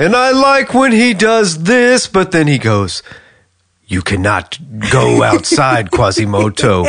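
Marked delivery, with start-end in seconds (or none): 3.9-6.8 menacing, villainous bad-guy voice. Talking about a character, the speaker quotes his line in a villain voice. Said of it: "He's definitely a villain voice".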